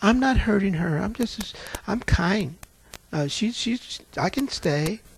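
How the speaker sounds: mock sweet, demure voice. Retelling what a demon said when asked its name, mock sweet and demure. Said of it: "She sounded just as sweet and demure".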